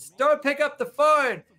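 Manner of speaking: put-on, very high, shrill, drawn-out yelled scream. Retelling a plea to mom about the phone: imitating own past scream. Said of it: "I still remember screaming".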